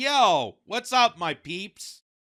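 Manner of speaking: fake gangster drawl, very slow. Mocking how police officers try to sound hip: fake hip gangster voice. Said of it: "how he has to sound like a gangster".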